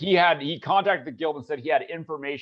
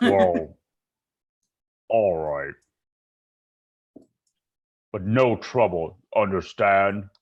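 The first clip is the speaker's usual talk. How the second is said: low, stout frog creature voice; 6 semitones lower than usual. Voicing a bullywug greeting newcomers at the bar: stout bullywug voice. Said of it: "And he goes".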